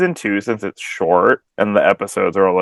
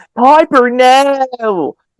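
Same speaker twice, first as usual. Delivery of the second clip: mock very high shrill screaming, long drawn-out no; 6 dB louder than usual. Retelling what many people kept screaming: imitating people screaming.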